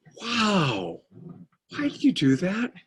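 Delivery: innocent, genuinely curious amazement, high and swooping. Contrasting two kinds of curiosity, the speaker demonstrates a childlike wonder tone. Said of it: "Childlike wonder is".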